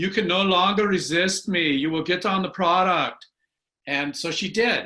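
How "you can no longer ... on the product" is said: loud put-on German accent, best attempt. Phoning a sister who kept resisting, speaking in a put-on german accent. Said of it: "I put on my best German accent".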